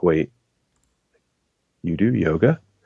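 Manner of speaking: shady, secretive, conspiratorial lean-in tone. Retelling how a man leaned in, looked around, and asked about yoga: imitating someone speaking quietly. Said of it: "again, he, like, leans in real quiet".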